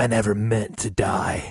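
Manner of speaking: fake tough-guy whisper. Imitating a poorly acted game character: masculine Keanu Reeves whisper. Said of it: "the masculine Keanu Reeves whisper".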